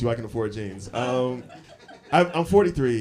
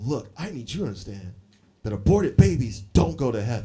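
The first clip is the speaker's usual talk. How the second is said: mock-angry ranting woman's voice. Retelling what a woman said after the set: imitating an angry woman. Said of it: "super angry when I come off stage".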